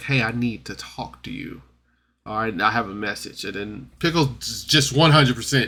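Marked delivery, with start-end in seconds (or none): 0.0-3.4 quiet, secretive whispering. Recounting a scene where one character tries to tell another something, retelling a whisper. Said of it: "She kind of whispers like".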